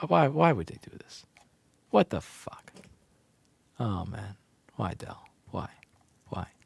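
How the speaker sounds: quiet, angry, fed-up, pissed-off tone. Streamer vents to his viewers about Dell's new keyboard, angry. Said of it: "I'm I'm too pissed right now".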